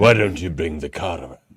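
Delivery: low mumble. Asked to hear a Victor Newman impression, the speaker gives a mumbling Victor Newman impression. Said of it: "Mister Mumbles".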